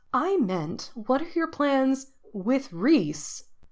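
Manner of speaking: slow and clear. Nisha to Jack, very slowly and clearly, as if explaining to a small child. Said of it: "very slowly and clearly, as if explaining something to a small child".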